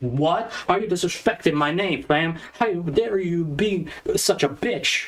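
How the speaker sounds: high, drawn-out, indignant, outraged. Imagining a listener's reaction to a ranking, imitating an outraged listener. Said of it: "jumping out of your chair and be like".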